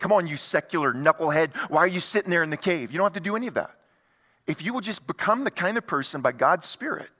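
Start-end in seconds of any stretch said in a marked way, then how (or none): none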